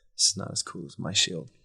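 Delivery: muttering, mumbled under breath. A player voicing their character on the way downstairs: muttering. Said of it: "kind of mutters like".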